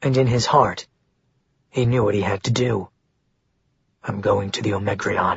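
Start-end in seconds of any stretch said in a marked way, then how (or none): 4.0-5.4 low, hushed, quiet tone. Narrator reading a man's line kept low so the receptionist can't overhear: low, hushed tone. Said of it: "His tone was low so that the receptionist couldn't overhear him".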